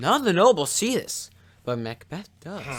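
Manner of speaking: plain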